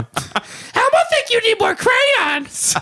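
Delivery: put-on very high, slow, squeaky, childlike puppet voice. Speaker jokingly quotes something Elmo told him on the beach, Elmo voice. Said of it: "Elmo told me something really".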